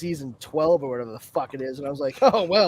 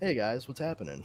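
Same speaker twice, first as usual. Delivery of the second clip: put-on very soft, soft-spoken Texas accent; 5 semitones lower, 11 dB quieter than usual. Showing how an actor sounds off camera: imitating Jensen Ackles' soft-spoken Texas voice. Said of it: "you're more soft-spoken from Texas".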